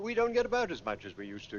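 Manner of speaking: plain reading voice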